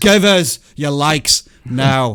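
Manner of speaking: put-on Irish accent, very drawn out, slow and loud. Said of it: "that's my best Irish accent".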